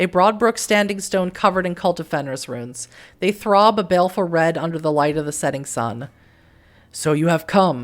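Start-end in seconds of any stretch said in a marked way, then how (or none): 6.9-7.8 low, rumbling, rolling deep delivery. Voicing a squirrel spirit greeting the player: deep rolling voice. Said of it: "a deep rolling voice says".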